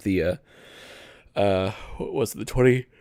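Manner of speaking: mid-yawn, spoken through a yawn. Talking about game writing, trying to recall a title; yawning. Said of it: "I keep yawning".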